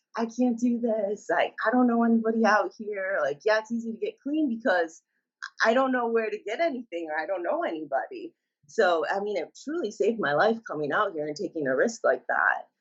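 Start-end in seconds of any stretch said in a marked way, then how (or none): 0.2-8.4 mock tearful crying, pleading tone. Retelling calls to her dad from a halfway house, imitating her past crying. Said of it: "calling my dad almost every day crying".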